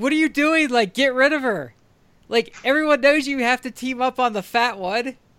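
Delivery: mock yelling, high-pitched. Retelling his wife's reaction while watching the Royal Rumble, imitating her yelling. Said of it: "my wife starts yelling".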